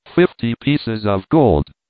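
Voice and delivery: ordinary talk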